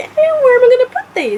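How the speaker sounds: high, loud excited exclamation.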